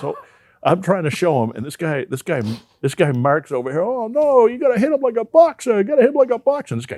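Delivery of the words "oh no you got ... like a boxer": put-on thick Italian accent, very high-pitched. Retelling what Mark said to the speaker, doing Mark's heavy Italian accent. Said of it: "really heavy Italian accent".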